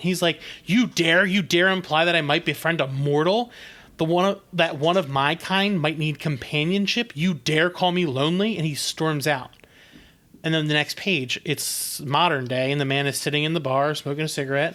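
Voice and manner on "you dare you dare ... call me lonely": normal talking voice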